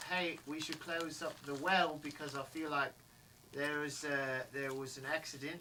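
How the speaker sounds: ordinary talk, nothing marked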